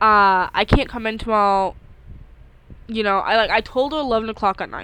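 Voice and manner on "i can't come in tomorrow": ordinary talk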